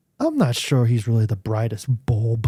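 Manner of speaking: low, brought-down voice, said aside. Retelling what a man said about his son Brad, in his lowered voice. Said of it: "he kind of like lowers his voice".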